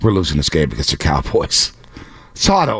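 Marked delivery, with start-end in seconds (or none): 0.0-1.7 hushed whisper under the breath. Retelling what someone whispered to him: imitating a whisper. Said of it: "Shasky whispers to me".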